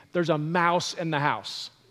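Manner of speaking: ordinary talk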